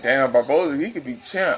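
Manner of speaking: usual speaking voice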